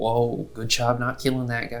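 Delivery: gentle, sweet whisper. Riding behind a companion on the motorcycle, whispering sweet nothings in their ear. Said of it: "start whispering like s- sweet nothings".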